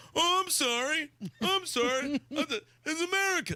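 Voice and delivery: very high, slow, drawn-out cartoon dad voice. Retelling a cartoon dad being dragged away by police: Randy Marsh voice. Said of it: "is that not exactly how he just sounded?".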